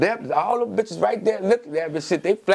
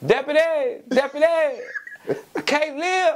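very high, stretched, drawn-out hollering yell; 9 semitones higher than usual. Retelling calling out for the deputy, retelling a high-pitched yell. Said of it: "On my high voice".

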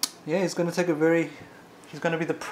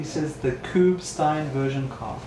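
plain

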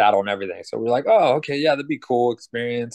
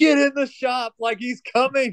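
put-on, very high yelling; 13 semitones higher than usual. Speaker retells yelling at the kids while helping someone up, retelling own yell. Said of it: "yelling at the kids".

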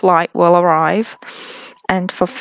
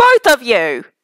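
unexpectedly angry voice; 3 semitones higher than usual. Voicing a character calling out to two arriving heroes, sounding angry. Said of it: "I sounded angry there".

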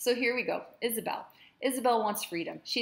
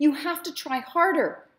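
raised, pitched-up, chiding scolding tone; 7 semitones higher, 8 dB louder than usual. Narrator reads the speaker pulling a collapsed man to his feet, scolding. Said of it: "I scolded as I stood up".

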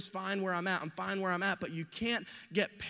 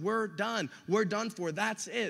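usual speaking voice

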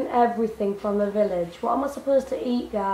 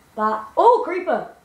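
excited cry, louder and much higher; 4 semitones higher, 6 dB louder than usual. Speaker spots a creeper by their house, sounding excited. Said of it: "It sounded like you were excited".

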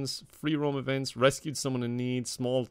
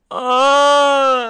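loud, shrill, long, drawn-out wailing bear cry; 13 semitones higher, 15 dB louder than usual. Showing how a bear sounds when it falls: imitating a bear's cry. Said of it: "it sounds a little like".

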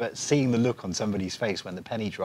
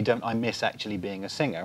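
plain

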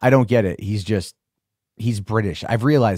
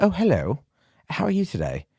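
laid-on fake British accent, high and swooping; 7 semitones higher than usual. Ordering lunch, the speaker greets a girl in a put-on British accent. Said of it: "Put on a British accent".

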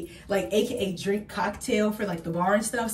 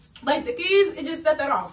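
high-pitched talking through a mouthful while chewing; 7 semitones higher, 4 dB louder than usual. Speaker eats an Easter snack before heading to registration, talking with mouth full. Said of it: "sorry, I'm talking about my mouthful".

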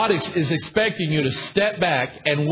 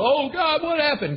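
very high, acted, tearful crying wail; 11 semitones higher than usual. Retelling Joshua coming back to God after a defeat: imitating someone crying. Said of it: "Joshua went crying to the".

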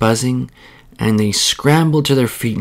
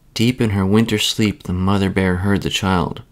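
ordinary delivery

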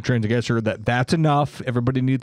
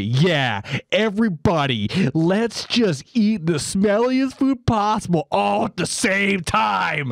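put-on snide condescension, loud and pitched-up; 7 semitones higher than usual. Speaker retells an airplane passenger addressing everyone, mimicking a loud condescending announcement. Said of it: "loudly and condescendingly say".

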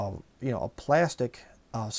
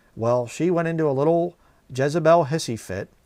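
normal talking voice

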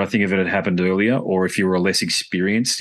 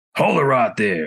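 put-on Texan accent. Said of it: "I'm sorry to do the accent".

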